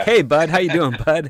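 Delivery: high, loud call, stress on "bud". Acting out how a script character greets everyone: imitating Lane Marlowe. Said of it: "He's like".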